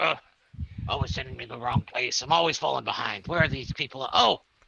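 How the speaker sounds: deep, low, rumbling dwarf grumbling mutter. Narrating a scene, the speaker voices a dwarf coming down the hall, deep grumbling voice. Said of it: "this deep grumbling voice like".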